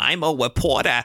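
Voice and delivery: weird, lisping cartoon character voice. Reviewing a Tom Hardy film, a host mimics his weird voice: Tom Hardy's Elmer Fudd-like voice. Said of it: "he sounds like a tiny tune of Alma Fudd".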